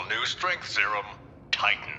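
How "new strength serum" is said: ordinary talk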